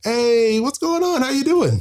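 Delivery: mock gushing, eager, all-enthusiastic, very high voice. Retelling walking by a man he'd only heard about; retelling own enthusiastic greeting. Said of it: "All enthusiastic".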